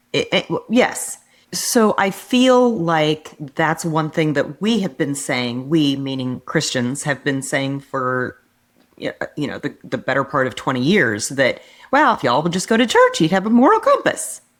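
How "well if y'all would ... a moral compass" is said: high sing-song voice, pitch swooping up and down. Quoting what Christians have been saying: Church Lady voice. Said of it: "did I sound like the church lady".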